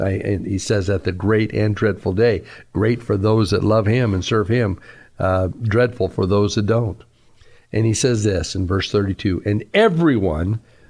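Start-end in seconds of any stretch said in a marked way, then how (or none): 9.4-10.6 strong stress on "everyone", word held out long. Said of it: "I'm emphasizing that word".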